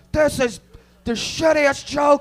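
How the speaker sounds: furious, shrill, high, very loud angry yell. Recounting a crowd member at an open mic, retelling a heckler's yelling. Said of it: "he's yelling at Troy".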